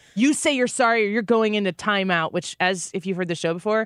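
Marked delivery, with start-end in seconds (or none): none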